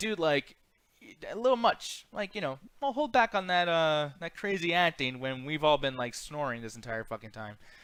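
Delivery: ordinary delivery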